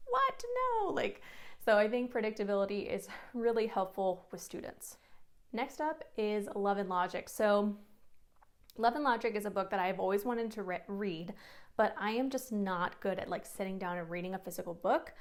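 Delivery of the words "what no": very high, shocked outcry. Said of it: "are like".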